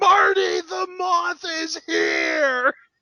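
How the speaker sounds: slow, high-pitched stretched yell.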